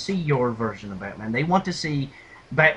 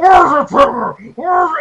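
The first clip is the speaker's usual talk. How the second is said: put-on superhero growl, higher and louder; 13 semitones higher, 11 dB louder than usual. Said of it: "using that awful voice".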